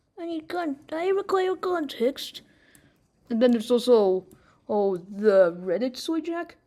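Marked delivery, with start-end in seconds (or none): 0.2-2.4 man's put-on high feminine voice, faintly British. Imagining how a certain voice would sound: man's mock feminine voice. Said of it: "a man trying to do an impression of a feminine voice".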